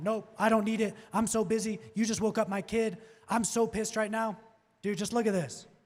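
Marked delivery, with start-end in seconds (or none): 0.0-4.4 mock irritated, angry voice. Role-playing a homeowner who comes out hot at the door: imitating an angry homeowner. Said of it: "even if he comes out hot and he's like".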